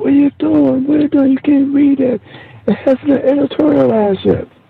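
very high, shrill screaming. Retelling a guy who came at him after a peek: imitating a guy screaming. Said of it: "This guy came screaming at me".

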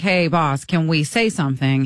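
plain

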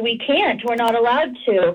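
ordinary talk

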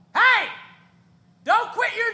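piercing high-pitched shout. Retelling a show where a heckler shouted: imitating a heckler shouting. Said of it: "they shouted at me".

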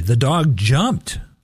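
jumped stressed with a slow rising pitch. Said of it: "I emphasize each word differently".

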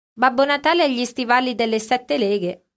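plain

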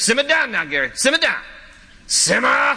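put-on southern Louisiana accent.

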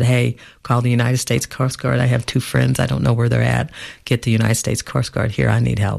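usual speaking voice

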